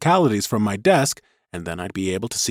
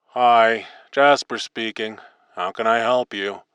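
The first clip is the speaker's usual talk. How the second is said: bored, uninterested voice. Reading a story, voicing a hotline worker answering a call: bored voice. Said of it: "The voice was just about as bored".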